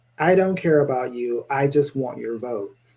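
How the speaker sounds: normal talking voice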